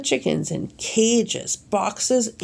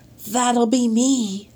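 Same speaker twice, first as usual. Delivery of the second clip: whispered, higher pitch; 3 semitones higher than usual. A man claims the chickens after the vendor asks whose they are, whispered. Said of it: "whispered Mr".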